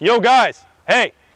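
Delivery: loud projected call. Showing a voice that travels and demands attention: loud projected call. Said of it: "makes my voice much louder".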